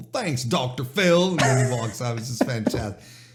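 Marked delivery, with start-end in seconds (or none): 0.0-1.3 put-on Georgian accent. Retelling a wrestler's rude comeback in the most Georgian accent. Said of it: "in the most Georgian accent too".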